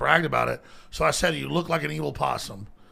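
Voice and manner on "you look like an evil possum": normal talking voice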